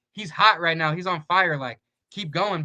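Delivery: ordinary delivery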